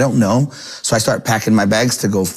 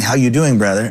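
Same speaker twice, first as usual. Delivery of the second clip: mock cocky, arrogant tone. Retelling how an arrogant guy greeted him: imitating a cocky greeting.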